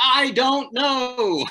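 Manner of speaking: very high-pitched, loud shout. Retelling calling a game into the microphone: retelling own yell. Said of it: "I yell into the microphone, loud for everybody to hear".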